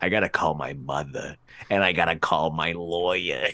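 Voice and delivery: low, gravelly voice. Quoting a movie line: gravelly low Harvey Fierstein voice. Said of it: "gravelly and low that it reminded me of Harvey Fierstein".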